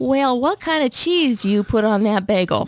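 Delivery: thick southern drawl, slow and drawn out. Retelling a woman questioning a clerk about bagel toppings; slow southern accent. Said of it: "in such a southern accent so slow".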